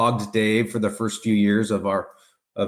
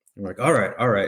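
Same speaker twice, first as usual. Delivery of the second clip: usual speaking voice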